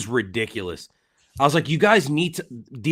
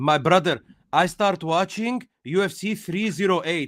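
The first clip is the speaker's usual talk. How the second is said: put-on Italian accent, higher; 4 semitones higher than usual. Retelling what an Italian commenter said in a debate: Italian accent. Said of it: "had to be Italian, like, by his accent".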